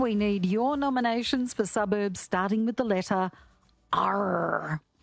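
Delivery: put-on pirate accent, r drawn out. Radio host making an on-air announcement to listeners, in a pirate voice. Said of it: "I don't know why I said it like a pirate".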